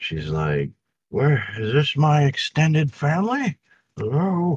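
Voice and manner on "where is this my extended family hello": put-on high-pitched elderly woman voice. Voicing an elderly lady poking her head out the door: elderly lady voice. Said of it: "you see this great elderly lady".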